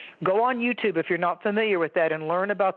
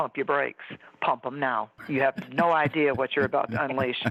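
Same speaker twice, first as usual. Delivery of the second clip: mock scary, low, menacing tone; 5 semitones lower than usual. Retelling what she says when somebody gets in her face: imitating her own scary warning. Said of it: "Scary Mary, Scary Mary".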